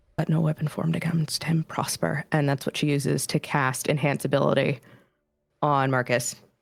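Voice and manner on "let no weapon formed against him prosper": whispered under her breath. Voicing a character casting a spell under cover of noise: whispering under her breath. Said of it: "Winnie whispers under her breath".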